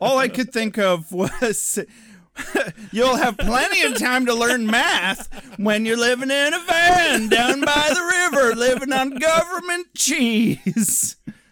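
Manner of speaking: put-on motivational yell, high pitched and loud.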